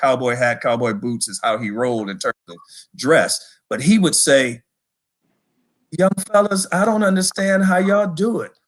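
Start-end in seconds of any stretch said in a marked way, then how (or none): 6.0-8.5 meek, timid delivery with raised pitch. Recalling what a tough man told the young fellas at practice: imitating a timid voice. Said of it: "he had a very timid voice".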